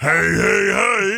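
high cartoon voice. Teasing a man on the radio about his voice, the speaker does a Fat Albert voice. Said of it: "He's got Fat Albert voice".

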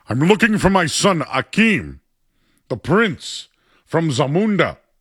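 slow, loud, stately delivery. Showing what was done when asked for the Darth Vader voice: James Earl Jones impression. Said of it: "I started doing Coming to America".

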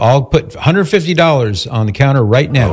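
ordinary talk, nothing marked

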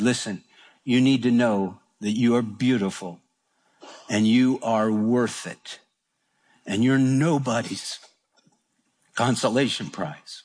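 softly whispered words. Retelling what the speaker told a woman, retelling a soft whisper. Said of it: "just kind of whispered to her".

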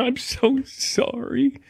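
high, slow, weepy fake sob. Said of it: "Yeah, I'm already crying".

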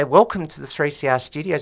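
ordinary talk

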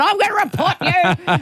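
mock outraged, cranky voice, pitched high.

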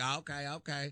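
put-on cowboy accent. Retelling a stranger's questions during a carpool ride: cowboy accent. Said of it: "this guy with a cowboy accent".

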